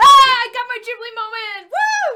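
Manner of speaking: thrilled, whooping, very loud, high excited shout. A player in a tabletop game finally gets a long-awaited moment, excited shouting. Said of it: "sorry for shouting so much".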